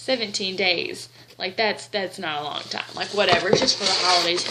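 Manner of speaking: normal talking voice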